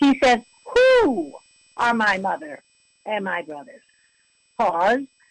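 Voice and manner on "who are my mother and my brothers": mock sarcastic delivery with swooping pitch. Quoting Jesus from the passage, imitating sarcastic Jesus. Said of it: "almost sounds like a sarcastic Jesus".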